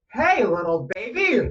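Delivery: loud, high, artificial theatrical put-on stage voice. Showing how talking to a baby would feel artificial, in a stage voice. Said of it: "use like a stage voice".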